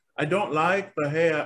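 attempted British accent. Speaker repeating a line while openly trying it in an attempted UK accent. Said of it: "I'm trying to do a UK accent".

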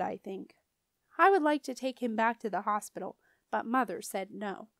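plain

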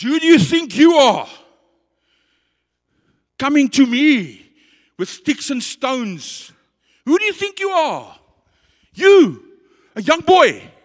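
mock giant's loud, slow, booming, taunting bellow. Retelling the giant taunting young David, retelling the giant's loud taunt. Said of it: "sorry, I'm loud because there's a reason".

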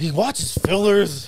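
put-on nerdy deadpan voice. Imitating another person's remark about a friend: Napoleon Dynamite voice. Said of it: "Why does he sound like Napoleon Dynamite?".

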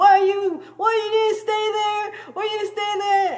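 very high-pitched yelling. Retelling a parking spot standoff, imitating the speaker's mom yelling. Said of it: "my mom is yelling at me".

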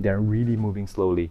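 plain

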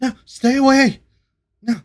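very high, very loud, frightened, pleading shriek. Narrator voices a green humanoid figure as a player slowly approaches, frightened cry. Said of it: "this figure is trembling and trying to get".

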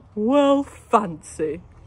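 said with a laugh. Narrator voicing a character as a lemur leaps into a girl's arms, laughing. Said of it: "laughed Mr".

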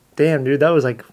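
ordinary talk

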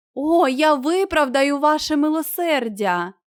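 glad outcry. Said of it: "радісно скрикнув він".

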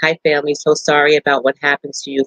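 plain

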